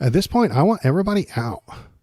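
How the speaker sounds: deliberate, high-pitched put-on woman's voice.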